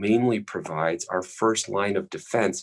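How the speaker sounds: ordinary talk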